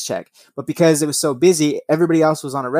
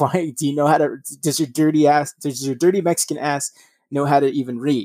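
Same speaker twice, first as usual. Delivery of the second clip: ordinary delivery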